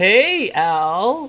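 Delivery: high, slow, small voice calling out. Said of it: "Tiny, uh, Nico calls out".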